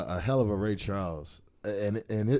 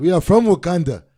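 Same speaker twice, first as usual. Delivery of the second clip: very loud, high-pitched put-on Nigerian accent; 9 semitones higher, 13 dB louder than usual. Trying out accents in conversation, speaking in a nigerian accent. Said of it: "I can do a Nigerian accent".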